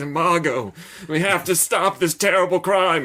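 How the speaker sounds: shaky, tense, high voice. Imitating Orson Welles playing Lamont Cranston: wavering, intense Orson Welles voice. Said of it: "he sounds like he's about to snap".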